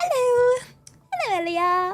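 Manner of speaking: imitated friendly, warm tone.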